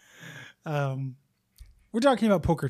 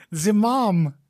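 higher, laughing, thick fake Russian accent. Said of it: "That is why I have the Russian accent".

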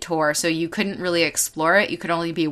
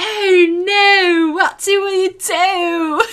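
terrible fake British accent, very high and shrill; 13 semitones higher, 6 dB louder than usual. Retelling someone's reaction to a dropping spider prop, the speaker uses a super bad British accent. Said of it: "super bad British accent".

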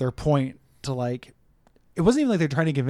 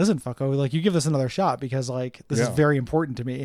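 plain

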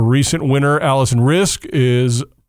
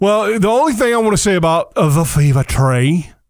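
awful fake British accent, pitched up; 6 semitones higher than usual. Discussing grass court tennis tournaments on air: bad fake british accent. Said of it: "I'm trying to talk in a British accent".

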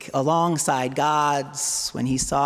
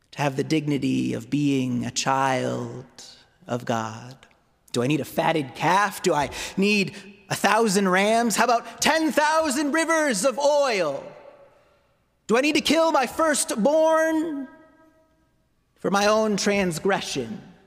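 sarcastic prophet voice, higher; 5 semitones higher than usual. Voicing the prophet Micah questioning the priests: sarcastic Micah voice. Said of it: "You can almost hear the sarcasm in his voice".

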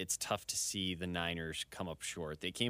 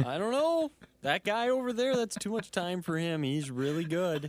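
put-on excitable commentator voice, higher and louder; 11 semitones higher, 7 dB louder than usual. Doing an impression of a football commentator talking to Jim: Tony Romo impression. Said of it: "Is that a good impression?".

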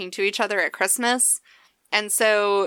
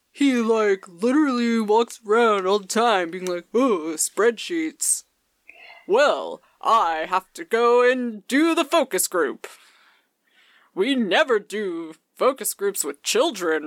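put-on dopey, dim-witted dumb guy voice. Imitating the spreadsheet guy: put-on dumb guy voice. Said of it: "He literally talks in my dumb guy voice".

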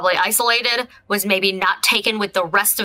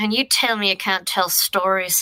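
quiet muttering under the breath. Voicing a character's aside to a companion: quiet muttering. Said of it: "she just quietly mutters".

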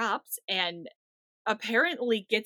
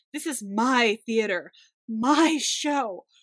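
put-on dramatic yell, louder; 7 dB louder than usual. Retelling how Peter Wong protests being taken out: imitating Peter Wong's dramatic yell. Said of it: "he very dramatically yells".

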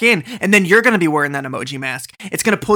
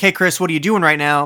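ordinary talk

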